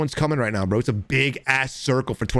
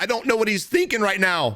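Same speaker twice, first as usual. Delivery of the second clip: high voice cracking partway through; 8 semitones higher than usual. Mid-game, unsure of another player's plan, voice cracking. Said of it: "My voice just cracked".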